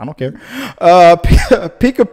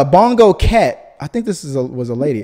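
ordinary talk, nothing marked

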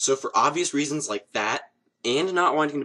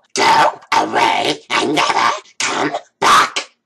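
very loud, raspy, rough creature voice; 11 dB louder than usual. After offering an impression to viewers, the speaker does a Gollum voice. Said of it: "Would you like to hear my Gollum voice?".

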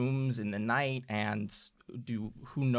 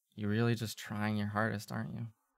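quiet, barely audible mutter under the breath; 3 dB quieter than usual. Voicing a character muttering a jab so only two can hear: quietly under his breath. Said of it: "you hear him quietly under his breath".

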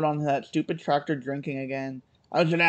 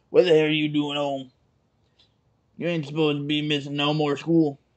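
put-on scolding voice. Acting out a woman catching someone home from school, imitating her deep voice. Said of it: "she had the deep voice".

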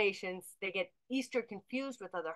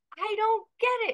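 mock very high voice, laughing and crying at once; 12 semitones higher, 6 dB louder than usual. A parent retells how their daughter reacts to a joke: imitating daughter laughing to tears. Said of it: "she says with tears running down her face".

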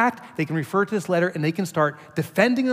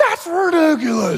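put-on very high, piercing, loud shrill yell; 10 semitones higher, 6 dB louder than usual. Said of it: "as Godzilla here is yelling at me".

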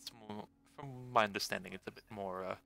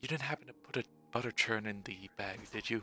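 hushed, quiet whisper. In a game scene, one character speaks to another, whispering. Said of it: "She just whispers over to Kane".

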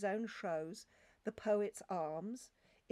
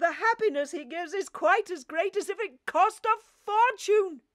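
heated, worked up, very high and loud; 10 semitones higher, 10 dB louder than usual. Narrator reading Scrooge's continued reply to the spirit, heated.

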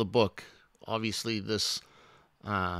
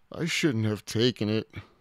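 usual speaking voice

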